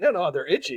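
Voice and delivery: plain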